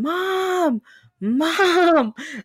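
very high, shouted screaming. Retelling how the uncle ran to the great-grandma's house, screaming. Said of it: "he's screaming".

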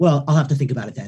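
mimicked dismissive tone. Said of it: "a really dismissive look".

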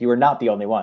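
playful ribbing tone. Talking about basketball articles, the speaker teases the listener: teasing. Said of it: "I'm teasing you".

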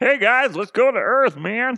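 very high, shrill, loud put-on alien voice. Acting out an alien's reply to a pleading visitor: put-on alien voice. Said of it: "that's how they talk".

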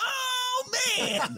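put-on voice pushed up very high. Reacting to a guest who never saw Videodrome: Michael Govier impression. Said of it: "that's my Michael Govier impression".

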